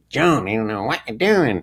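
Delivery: piercing, needling, sarcastic twang. Describing the voices Bob used: imitating Bob's sarcastic twang. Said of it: "this really sarcastic twang".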